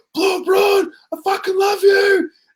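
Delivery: put-on shrill fan scream, very high. Retelling what a guy in the crowd screamed out: imitating a fan screaming. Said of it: "he screamed out".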